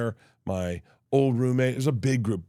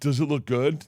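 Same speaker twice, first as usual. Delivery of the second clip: put-on vulnerable voice, pitched higher; 3 semitones higher than usual. Retelling a question asked at the mirror: imitating Tom sounding vulnerable. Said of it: "he looked at me so vulnerable".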